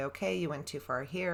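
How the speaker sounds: usual speaking voice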